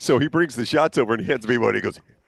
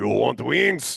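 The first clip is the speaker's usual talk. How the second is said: put-on heavy Ukrainian accent, laid on thick. Telling a story about a funny guy offering wings, thick Ukrainian accent. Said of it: "Thick Ukrainian accent".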